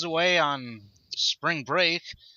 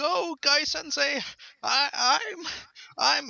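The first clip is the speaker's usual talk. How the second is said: put-on choked-up crying voice, higher pitch; 12 semitones higher than usual. Retelling a manga panel's line while imitating Lee choked up. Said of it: "and he's so choked up".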